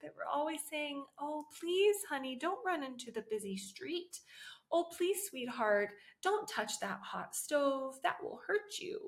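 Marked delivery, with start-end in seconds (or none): 1.2-9.1 mock-sugary, coaxing, overly sweet gentle tone. Mocking the myth that parents always talk gently to children, in a mock-gentle parenting tone. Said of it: "we always use a gentle tone".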